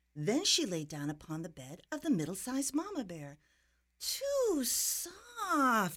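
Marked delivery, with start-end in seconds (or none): 4.0-6.0 high, whiny, whining little voice. Reading a story, she lies on the middle-sized Mama Bear's bed: whining. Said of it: "she whined".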